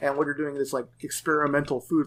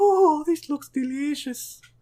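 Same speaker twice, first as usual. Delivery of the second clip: put-on very high, little old-lady voice; 14 semitones higher, 4 dB louder than usual. Discussing a game character's little voice, imagining it as an old lady. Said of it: "like if it was an old lady".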